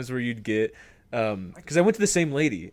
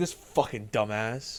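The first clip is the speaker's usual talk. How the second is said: mocking tone, quieter; 3 semitones lower, 4 dB quieter than usual. Retelling what the top reading group said: imitating classmates mocking. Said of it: "all the one A reading group would be like".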